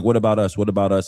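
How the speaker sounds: usual speaking voice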